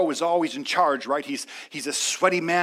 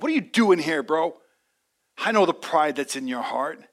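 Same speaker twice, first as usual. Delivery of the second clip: mock envious, grudging, resentful tone. Retelling a Bible scene where a brother confronts David, mock-jealous Eliab voice. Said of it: "can you hear the jealousy in the voice of Eliab".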